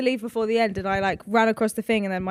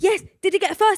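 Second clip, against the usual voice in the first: put-on screaming, higher; 9 semitones higher, 4 dB louder than usual. Retelling cheering at a sports day finish line: retelling a scream. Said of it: "I was screaming".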